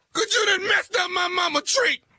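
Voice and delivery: tearful, weepy, crying while talking. Asked by the other man why they're crying, answering while crying while talking. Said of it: "What the crying for?".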